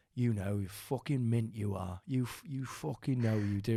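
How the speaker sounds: put-on Northern English accent. Telling a story about a man who said this, imitating a Northern English accent. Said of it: "he had like a Geordie accent or a Northern accent".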